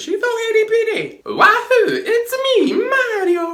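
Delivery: very high, loud, stretched-out, drawn-out cheer. Reviewing an episode, the speaker breaks into a Mario impression. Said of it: "Best Mario impression ever".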